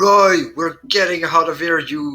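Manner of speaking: loud calling yell. In a role-play scene, Hector calls out to Roy while walking away: shouting. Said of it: "He's gonna start shouting like".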